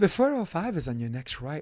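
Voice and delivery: put-on Australian accent, like a navigation voice. Retelling what the navigation voice said, in a put-on Australian accent. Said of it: "I turned her to Australian accent".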